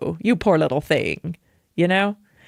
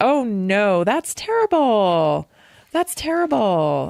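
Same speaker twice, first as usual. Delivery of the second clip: pitying, commiserating, sympathetic tone; 4 semitones higher than usual. Speaker demonstrating what sympathy sounds like in real life, sympathetic. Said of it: "so sympathy sounds like this".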